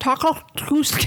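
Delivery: very high voice with dentures slipping out. Coached to try a voice, the speaker gives it a shot with loose dentures. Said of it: "make it sound like you have dentures that are falling".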